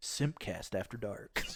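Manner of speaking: breathy, hushed, put-on deep announcer voice. On a podcast, announcing the show's name, in a put-on deep voice. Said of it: "Gotta get that deep voice".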